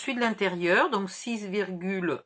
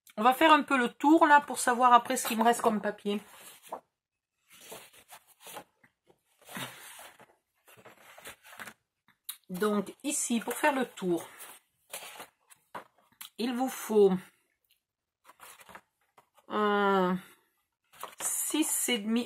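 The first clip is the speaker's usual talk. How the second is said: talking with mouth full, around a candy; 3 semitones higher than usual. Measuring leftover paper in a video, speaking with a mouth full of candy. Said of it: "j'ai pris un bonbon et j'ai la bouche pleine".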